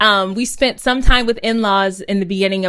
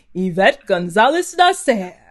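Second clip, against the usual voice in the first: put-on announcer voice, delivered more slowly. Show how Austin sounds in the booth on this show, doing Austin's announcer voice. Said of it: "really good announcer voice".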